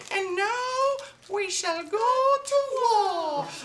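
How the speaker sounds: loud, very high, slow piping squeak. Retelling a movie scene where the big guy stands up to speak: squeaky high-pitched voice. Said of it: "he squeaks in this high-pitched voice".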